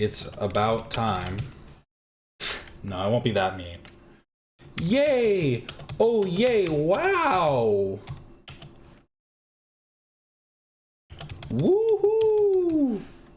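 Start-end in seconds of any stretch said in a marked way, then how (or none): 4.8-13.0 very high, very slow, sarcastic sing-song cheering. Reacting to a post that finally went up, with sarcastic cheering. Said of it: "Does this sound sarcastic?".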